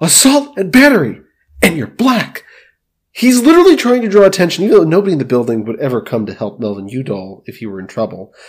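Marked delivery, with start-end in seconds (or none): 0.0-2.4 put-on screaming, high and shrill. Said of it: "he starts screaming".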